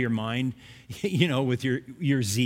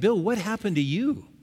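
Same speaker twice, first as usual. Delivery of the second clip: ordinary delivery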